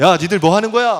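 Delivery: high, loud, threatening, angry thug yell.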